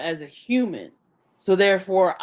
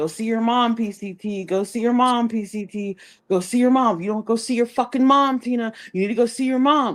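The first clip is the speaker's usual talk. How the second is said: put-on heated nagging yelling, repeated over and over; 4 semitones higher than usual. Retelling how Rose yelled at someone to go see her mom: imitating someone yelling. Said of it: "Rose was yelling at her".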